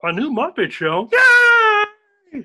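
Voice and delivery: "yay" stretched out, way up high. Answering a question about a new Muppet show: Kermit the Frog voice.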